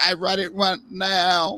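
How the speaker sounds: put-on slow, childish baby talk. Imitating the microwave generation wanting it now, in a childish baby voice. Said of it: "I've got my baby voice on".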